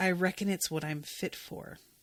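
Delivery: mock-lifeless delivery. Retelling what a woman said to the speaker, imitating a dead, flat tone. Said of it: "with this fucking deadness in her tone".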